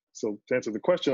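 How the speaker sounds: plain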